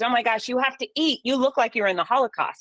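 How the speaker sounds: mock terrified frantic yell. Cancer survivor recalls his terrified mom calling about his weight loss, imitating mom yelling. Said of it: "she calls and she yells at me".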